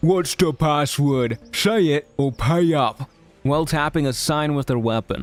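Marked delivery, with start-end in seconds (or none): 0.0-3.1 slow, grunting monster voice. Narrator voicing the left head of a two-headed guard, in a grunting creature voice. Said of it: "his left-headed grunts and says".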